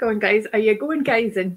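badly done, butchered put-on Scottish accent. Quoting how they asked about going in, butchered Scottish accent. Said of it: "butchered the Scottish accent there too".

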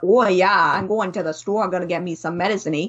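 quick Newfoundland accent. Explaining Newfie expressions, showing how someone with the accent talks: Newfoundland accent. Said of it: "if you have a Newfoundland accent, you'd be like".

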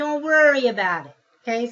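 attempted New York accent. Addressing course members who missed sessions, best new york accent. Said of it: "in my best New York accent".

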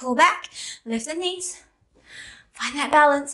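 winded, breathless, puffing between breaths. Leading viewers through a yoga sequence, out of breath. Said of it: "I'm puffed".

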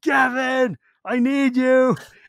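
very slow, loud, high, drawn-out yell at full volume. Retelling calling a friend over during a game: retelling a yell at the top of lungs. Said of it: "I yelled out at the top of my lungs".

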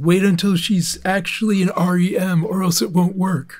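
clumsy mock AI cartoon voice. Describing a video, quoting what the AI voice says, as bad AI Patrick. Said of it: "The AI Patrick voice says".

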